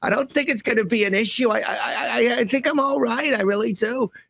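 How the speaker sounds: put-on very high-pitched, slow, drawn-out Brooklyn accent. Imitating a public figure who hears others talking about him: Fauci impression with Brooklyn accent. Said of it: "He talks like Woody Allen or something".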